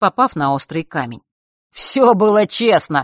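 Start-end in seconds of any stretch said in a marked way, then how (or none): 1.7-3.0 jeering, taunting, mocking shout. Fesh calls out to Mark and the others, mocking shout. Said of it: "насмешливо выкрикнул Фэш".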